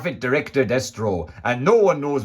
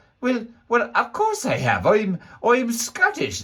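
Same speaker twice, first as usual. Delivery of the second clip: put-on Scottish accent slipping into Irish, much higher; 8 semitones higher than usual. Answering a doubting questioner, in a scottish accent slipping into irish. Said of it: "That's starting to sound Irish".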